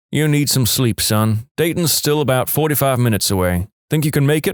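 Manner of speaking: ordinary delivery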